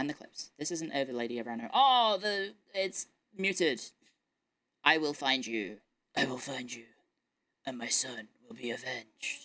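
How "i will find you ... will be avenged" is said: low, menacing, threatening voice. After thanking a supporter, deliver the threat as a menacing Jensen impression. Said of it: "How's my Jensen impression?".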